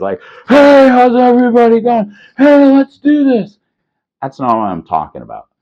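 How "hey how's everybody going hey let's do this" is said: play-acted drunk voice, shrill, very high, very loud. Imitating a guy at the casino who has had too many drinks: imitating a drunk casino guy. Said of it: "He's probably had a little too many to drink".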